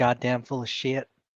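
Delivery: soft, grumbled mutter under the breath. Voicing a character's muttered remark during a meal: muttering under her breath. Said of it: "under her breath goes".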